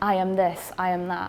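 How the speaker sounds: ordinary talk, nothing marked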